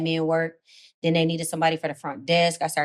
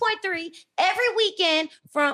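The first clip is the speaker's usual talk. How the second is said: high-pitched, put-on radio host voice. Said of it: "what would your fake ass radio voice sound like? Give it to us".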